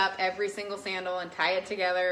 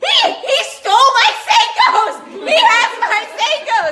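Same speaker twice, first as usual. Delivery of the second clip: very high, very loud, shrill, drawn-out panicked scream; 16 dB louder than usual. Retelling panicking on a busy road after losing bags: imitating her own screaming. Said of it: "And I'm just screaming".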